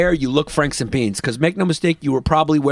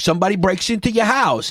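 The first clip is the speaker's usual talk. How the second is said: put-on Jersey accent, pitched higher; 5 semitones higher than usual. Retelling a comic's joke: imitating Frank Gallo's Jersey accent. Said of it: "a Jersey accent".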